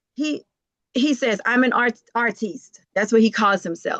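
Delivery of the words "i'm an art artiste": normal talking voice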